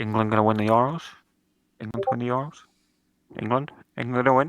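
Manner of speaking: hushed, whispered speech. Not wanting to jinx it, the speaker lowers their voice to a whisper. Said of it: "I'm gonna whisper this".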